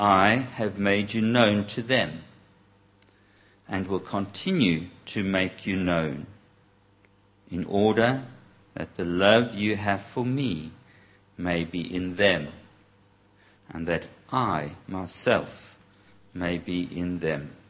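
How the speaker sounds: read slowly, with many pauses. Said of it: "to read it like that, that, slowly".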